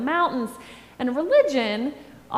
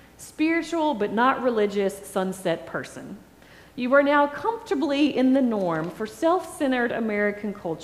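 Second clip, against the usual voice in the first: normal talking voice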